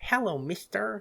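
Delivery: put-on high, silly, dumb little-kid voice. Recalling voicing a little crocodile girl in a stream: Sweet Geraldine little-kid voice. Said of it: "Like just dumb little kid".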